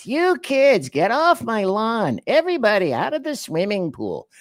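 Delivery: very high, nagging, whiny shout. Speaker showing the voice he says he has for yelling: whiny yelling voice. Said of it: "yelling in a in a a, a whiny voice".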